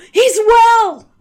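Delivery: high, loud, gasping astonished shout.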